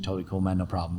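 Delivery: soft, put-on English accent. Retelling the boss's reply to a request, in Kane's English accent. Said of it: "in his English accent".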